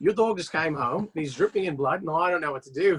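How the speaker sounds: put-on Australian accent, done well. Speaker retelling a call from their australian roommate, in an australian accent. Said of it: "that's a pretty good accent".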